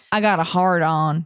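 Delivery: put-on Southern US accent. Mid-banter, the speaker switches voice: put-on southern accent. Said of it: "you can put some southern in her".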